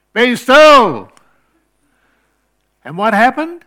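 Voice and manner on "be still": very loud, high-pitched, full-lung yell. Speaker recounts shouting alone on an empty beach front; retelling a loud yell. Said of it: "I yelled in the loudest voice I could".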